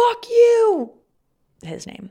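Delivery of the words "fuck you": shrill, high-pitched scream at full volume. Retelling falling out of the car and yelling after him: imitating her own yell. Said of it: "and I yelled".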